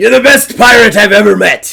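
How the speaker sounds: very loud, high, belted character voice. Retelling what the pirate character Grimes keeps saying in the game: Grimes voice. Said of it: "this Grimes character is just like".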